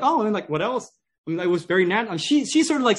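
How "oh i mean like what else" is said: light, slightly pitched-up, acted casual offhand nonchalance. Retelling how she plays it down: imitating someone saying it nonchalantly. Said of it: "says it very nonchalantly".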